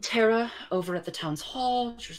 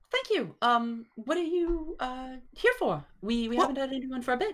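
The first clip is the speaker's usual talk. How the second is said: put-on pitched-up young female gnome voice; 7 semitones higher than usual. Voicing a young gnome shopkeeper greeting customers: young female gnome shopkeeper. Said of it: "a young female gnome who is behind the counter".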